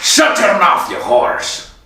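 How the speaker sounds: put-on Irish-accented pirate voice. Handed the floor to start off, the speaker opens in a pirate-like voice. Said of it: "I do sound like a fucking pirate".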